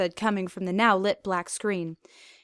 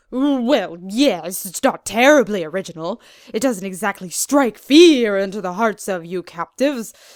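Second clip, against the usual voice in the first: very loud, openly obvious mocking tone; 8 dB louder than usual. Reading a story aloud, the doctor teases the villain: obvious mocking tone. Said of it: "with obvious mocking tone in his voice".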